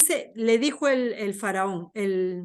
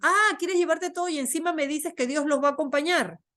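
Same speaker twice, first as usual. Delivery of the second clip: scornful, mocking, taunting tone; 4 semitones higher than usual. Narrating the king's reply to his people, imitating his mocking tone. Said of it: "burlándose de ellos".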